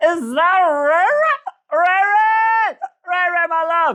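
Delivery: mock wasted-drunk calling out, very high and drawn-out. Retelling a story, a drunk character calls out to ray ray: imitating a drunk woman. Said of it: "drunk A F".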